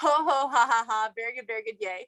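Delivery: playful laughter. Retelling recording a video alone, doing the laughing yoga exercise. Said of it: "doing this YouTube video all by myself".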